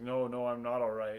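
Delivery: acted dazed, out-of-it voice. Retelling how a woman answered when asked if she was okay, imitating a dazed voice. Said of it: "in a kind of dazed sounding voice".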